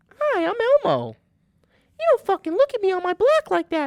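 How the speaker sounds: very high, squeaky, swooping voice. Trying to do Elmo's voice, the speaker lands on a Mickey Mouse voice. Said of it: "That's that's Mickey Mouse".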